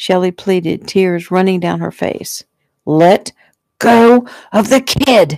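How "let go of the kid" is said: very slow, dragged-out, high-pitched drawn-out scream. A narrator reads a gunman ordering a woman to release a child: screaming. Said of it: "Tommy screamed".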